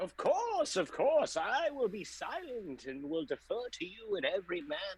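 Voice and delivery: very high, wild, crazy wizard voice. Voicing a character who promises to stay silent: crazy wizard voice from RPGs. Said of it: "You sound like the crazy wizard".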